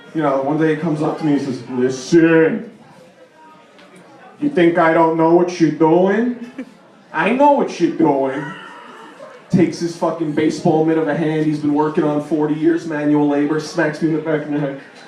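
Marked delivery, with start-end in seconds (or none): 1.6-8.4 put-on slow, heavy, intimidating Brooklyn accent. Retelling what an intimidating Brooklyn-born man said to him, thick Brooklyn accent. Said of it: "got the thick Brooklyn accent".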